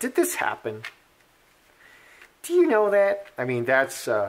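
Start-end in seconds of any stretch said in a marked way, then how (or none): 0.0-3.3 animated, high voice with big rising swoops. Asking whether a rumored email happened: Ocasio-Cortez impression. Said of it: "that's my impression of Ocasio-Cortez".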